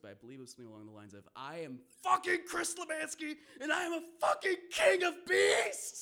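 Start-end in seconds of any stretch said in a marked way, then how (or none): 1.3-6.0 shrill, very high, full-volume triumphant scream. Retelling surviving and taunting the dogs, re-enacting screaming as loud as possible. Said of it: "I screamed as loud as I could".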